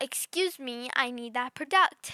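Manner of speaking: put-on irritated, insistent, peeved old lady voice. Speaker retells an old lady demanding a product back; imitating a louder irritated demand. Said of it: "She says that louder and like she gets a little bit more irritated".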